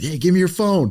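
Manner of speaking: sudden, high-pitched shouted yell. Retelling how someone yelled after the fight: imitating Sean yelling. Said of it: "Sean yells at me".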